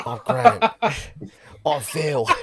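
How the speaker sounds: bad, put-on Cockney accent. Told the accent was bad, the speaker does a bad Phil and Grant Mitchell impression. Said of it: "You can't do a Cockney accent either".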